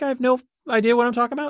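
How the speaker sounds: uptalk, rising end on about. Asking if they end every sentence like a question; question-like rise on about. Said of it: "Am I ending every sentence with a question mark?".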